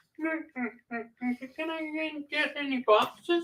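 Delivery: squeaked up high and stretched out slow. Imitating a customer who asked for boxes: Kermit the Frog voice. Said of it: "he sounded like Kermit".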